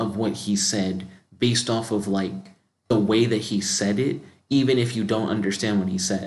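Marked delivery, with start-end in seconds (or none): none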